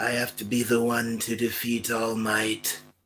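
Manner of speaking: creepy, sinister villain voice. Showing the others a villain impression: Tomura Shigaraki impression. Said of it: "I can do Tomoe Shigaraki".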